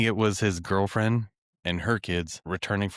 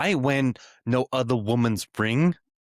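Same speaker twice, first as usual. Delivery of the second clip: sudden put-on New York Bronx accent, pitched up; 5 semitones higher, 4 dB louder than usual. Acting out a woman learning her ring was another woman's, Bronx accent. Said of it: "Suddenly she's from the Bronx".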